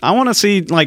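high, eager voice. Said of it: "and he was like".

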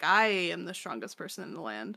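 normal talking voice

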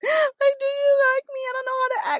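mock, very high, tearful sobbing voice. Speaker acting out their past self on the couch, imitating their own crying. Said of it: "and I'm like crying".

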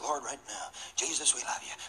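put-on hushed praying voice. Retelling how a man prayed in his car, imitating a soft prayer. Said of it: "Like in a kind of a soft voice".

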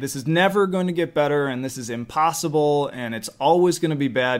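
ordinary talk

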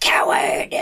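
whispered, breathy, screeching monster cry. Voicing a snake creature as it attacks a fleeing foe: screeching monster voice. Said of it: "as it screeches out".

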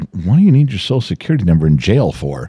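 ordinary delivery

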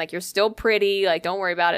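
usual speaking voice

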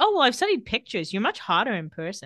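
ordinary delivery

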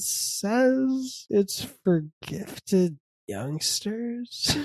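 very slow, stretched-out, drawn-out delivery. Reenacting what the other speaker just said, imitating their way of talking. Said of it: "You were talking like this".

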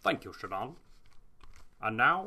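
polished evening newscaster anchor voice. Taking the handoff back in the studio, the anchor speaks in a Sean Connery newscaster voice. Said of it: "newscaster sounding more and more like Sean Connery".

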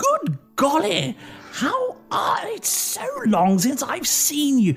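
very high, slow voice of a bustling woman. Voicing a woman who bustles over to greet a player: woman in a very large dress. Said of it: "a woman in a very large dress comes bustling over to you".

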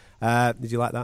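ordinary talk, nothing marked

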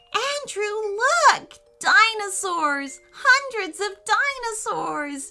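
squealing with delight, very high and loud. Narrator reads Francesca calling out to Andrew, squealing with delight. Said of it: "She squealed with delight".

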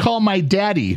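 put-on screaming. Reminding her what she did five minutes earlier, retelling a scream. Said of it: "you were screaming".

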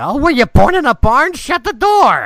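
put-on very high, very loud, shrill, booming old-man holler. Game master voicing a little old man who looks you all over: little old man voice. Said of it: "standing there is a little old man who's hunchbacked and hands are kind of gnarled. / standing there is a little old man who's hunchbacked and hands are kind of gnarled. And when he looks at you, you".

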